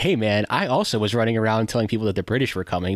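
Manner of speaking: usual speaking voice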